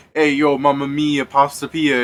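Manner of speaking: hammy, slow, drawn-out loud hollering. Imagining people out in the street yelling at someone: imitating someone yelling. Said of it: "out in the fucking street yelling at you".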